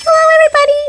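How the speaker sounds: squeaky high hello. Greeting listeners at the start of the show, squeaky voice. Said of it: "my voice is really squeaky today".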